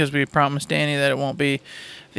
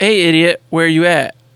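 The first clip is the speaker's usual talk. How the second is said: normal talking voice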